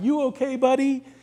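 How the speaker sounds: shouting, pitch very high. Recalling struggling in the cold water, the speaker acts out Richard calling back: imitating Richard shouting. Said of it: "Him shouting back".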